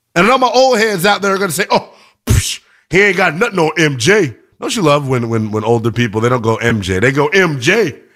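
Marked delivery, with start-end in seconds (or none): 2.9-4.3 put-on Southern twang, mock Southern accent. Mimicking older basketball fans dismissing a player, in a put-on southern twang. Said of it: "It's that Southern twang that they put on it".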